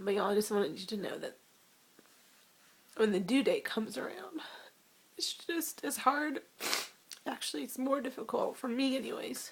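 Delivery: crying, tearful speech. A woman shares her experience with her audience, crying while talking. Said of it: "I'm crying".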